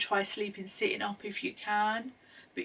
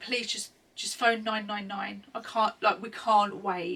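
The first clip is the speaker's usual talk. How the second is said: ordinary talk, nothing marked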